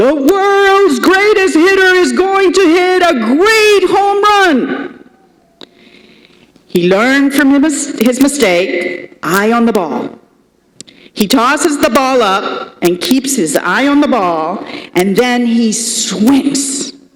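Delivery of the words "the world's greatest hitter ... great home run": very high, booming, resounding voice. Storyteller acting out a batter's boast after a missed swing, booming voice. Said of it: "says out loud in a booming voice".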